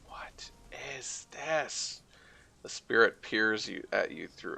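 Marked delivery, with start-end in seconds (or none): 0.1-2.0 gentle, echoing high voice. Narrating a scene, voicing a spirit as it takes shape and first speaks, soft echoing voice. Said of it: "A soft voice echoes out from deep inside".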